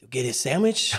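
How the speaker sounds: put-on Spanish-accented voice. Doing an impression of the cashier when asked: imitating the cashier, Mexican Spanish accent. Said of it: "can you do an impression of the cashier?".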